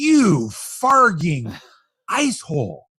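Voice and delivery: put-on slow aggressive tone. Quoting a movie line while describing it to another speaker: imitating an aggressive insult. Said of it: "he says it with such aggressiveness".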